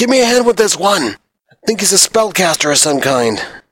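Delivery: loud, high-pitched yell. Narrator voicing a foe who yells to the others, yelling out. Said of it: "he kind of yells out".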